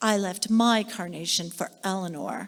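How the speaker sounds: mock sour, unfriendly, unpleasant delivery. Retelling what they said to a woman after laying down a carnation, retelling an unpleasant tone. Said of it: "in a still not very pleasant tone of voice".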